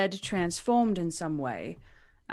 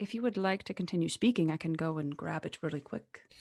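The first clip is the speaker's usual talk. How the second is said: quick, hushed half-whisper; 5 dB quieter than usual. Half-whispering back to another character in the scene: in-character half-whisper. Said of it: "I will quickly whisper back".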